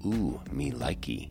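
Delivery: hushed little half-whisper under the breath. Telling how climbers greeted a downturned shoe, imitating Jonathan Siegrist half-whispering. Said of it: "whispered a prepubescent Jonathan Siegrist".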